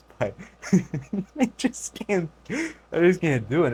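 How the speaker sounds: high, slow words spoken through laughter. Reacting to a clip he finds absurd, laughing while talking. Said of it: "it's a bit rude to just start laughing like this".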